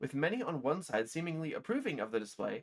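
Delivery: ordinary delivery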